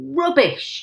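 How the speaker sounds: loud, high-pitched yell. A man, hearing the explanation about the birds, yells back. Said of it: "yelled Mr. Hazel".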